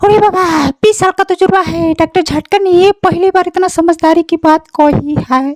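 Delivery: very high cartoon character voice. Performing a Motu Patlu scene, Ghasitaram answers Doctor Jhatka, Ghasitaram cartoon voice. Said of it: "फिर उसके बाद घसीटा राम ऐसा बोलता है".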